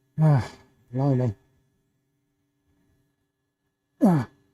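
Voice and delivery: winded, huffing and puffing between words. Pushing through one more round of effort, huffing and puffing. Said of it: "I'm huffing and puffing".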